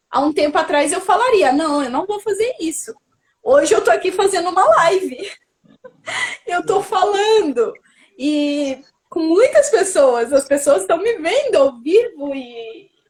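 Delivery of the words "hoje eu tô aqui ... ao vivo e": anxious, nervous voice with nerves showing through. Speaking on a live stream watched by many people, nervous. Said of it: "tô nervosa, tô muito nervosa".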